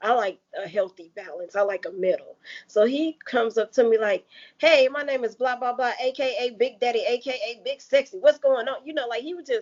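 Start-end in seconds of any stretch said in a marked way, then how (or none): 4.6-8.9 put-on brash delivery, laid on thick, over the top. Retelling how a guy at Walmart approached her: imitating someone coming on too strong. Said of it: "he came on way too strong".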